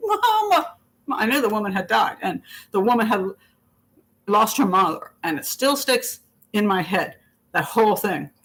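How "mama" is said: mock shrill, very high, piercing scream. Retelling a woman outside the hospital cubicle screaming for her mother: imitating a woman screaming. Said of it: "all I can hear is".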